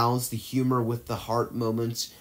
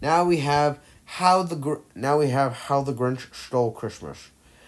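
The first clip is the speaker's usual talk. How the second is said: forced, high, slow put-on character accent. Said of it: "I know that was a forced accent".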